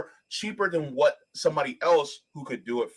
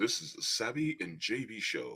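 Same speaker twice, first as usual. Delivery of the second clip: very quiet, deep, hushed low voice; 5 semitones lower, 11 dB quieter than usual. Reading out a comment that asks for a deep voice: deep voice. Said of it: "In a deep voice".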